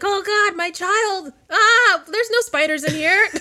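frantic, panicky, very high, drawn-out voice. Imagining how a mom reacted to a spider: imitating a panicking mom.

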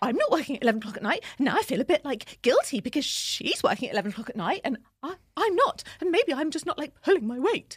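put-on panicky babble, high and loud. Explaining feeling guilty about not working late at night, put-on panicked voice. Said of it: "What is this voice?".

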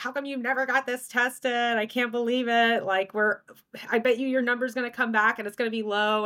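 yelling, put on. Retelling what a man said about a missed test: imitating someone yelling. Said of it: "he was yelling at me".

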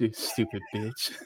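quiet whisper under the breath. Retelling a clip where a man whispers an insult: imitating a whispered insult. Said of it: "And he whispers it too".

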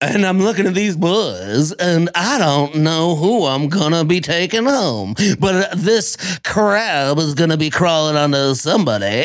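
put-on low, old-lady voice. Describing a new island contestant, Kate, talking like she's 80 years old. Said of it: "she talks like she's 80 years old".

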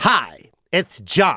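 speaking voice swooping up and down in pitch. Retelling a phone call, imitating Jon Lovitz's voice. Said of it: "He talks like that for real".

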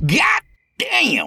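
very high, high-pitched yelling shout. Reading a story aloud, the narrator woken by pounding on the door: yelling. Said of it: "I yelled".

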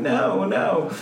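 plain

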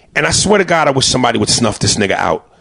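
ordinary delivery

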